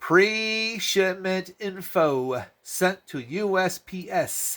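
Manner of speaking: very slow, high preschool read-along voice. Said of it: "let's everybody read together like we're in preschool".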